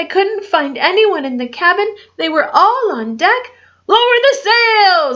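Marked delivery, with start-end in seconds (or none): 3.9-5.2 high-pitched, forceful shouted delivery. On a ship in a storm, an order to everyone on deck, shouted. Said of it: "Braidbeard shouted".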